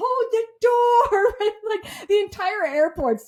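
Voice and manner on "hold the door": high, loud shout. Retelling a rush through the airport, imitating the driver yelling. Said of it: "the driver starts yelling".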